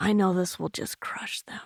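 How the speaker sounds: soft, unvoiced whisper, as if to oneself.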